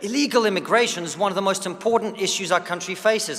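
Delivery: ordinary delivery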